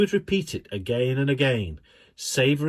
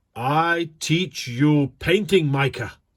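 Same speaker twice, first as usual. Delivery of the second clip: very slow, measured, deliberate, carefully weighed delivery; 3 dB louder than usual. Narrator reads the painting teacher's words to Micah, very slow and measured. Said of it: "said very slowly, in a very measured way".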